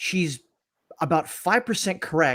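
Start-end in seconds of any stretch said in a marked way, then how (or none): none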